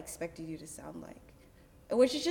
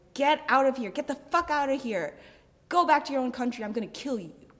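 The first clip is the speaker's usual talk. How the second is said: raised, pitched-up hollering; 5 semitones higher, 7 dB louder than usual. Retelling how a man following on the street shouted: imitating a man shouting. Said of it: "He's shouting".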